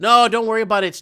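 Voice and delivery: loud, sarcastic, dismissive tone. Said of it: "No, I'm being sarcastic".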